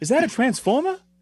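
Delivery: very high, squeaky movie-star voice. Joining an impression contest with the others: Mark Wahlberg impression. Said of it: "my best, uh, Mark Wahlberg is just like".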